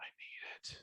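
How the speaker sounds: desperate craving whisper, barely voiced. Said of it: "I would see it and be like".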